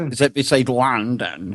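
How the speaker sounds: bad put-on Glasgow accent. Asked where Glasgow is, answering the group in a terrible Glasgow accent. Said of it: "That is the worst accent I think".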